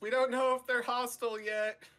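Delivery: shouting in a character voice. Voicing the Outlander warning the others about a possible threat: shouting in character. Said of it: "The Outlander shouts".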